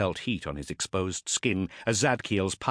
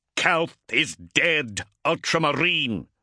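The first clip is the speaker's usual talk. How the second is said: deliberate, slow, drawn-out, high-pitched shout; 7 semitones higher, 5 dB louder than usual. Reading fiction, a warrior holding a blade to his foe's throat: shouted. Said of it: "shouted Zadkiel".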